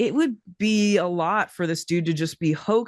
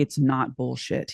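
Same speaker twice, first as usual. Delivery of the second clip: low, grave, earnest, dead-serious, acted; 5 semitones lower than usual. Retelling a man's reply after the photo was called fake: imitating someone being very serious. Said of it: "he was very serious".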